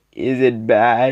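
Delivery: acted-out tearful crying voice. Retelling a story, quoting him asking her, imitating a crying tone. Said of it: "like in that kind of crying tone".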